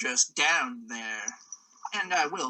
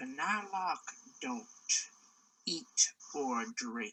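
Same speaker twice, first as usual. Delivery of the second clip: lowered, hushed, confiding voice; 7 dB quieter than usual. A character leans in and answers the three players, in a lowered voice. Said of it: "and he low and he lowers his voice and says to the three of you, / and he low and he lowers his voice and says to the three of you".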